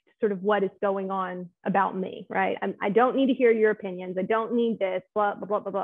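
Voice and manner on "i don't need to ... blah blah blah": normal talking voice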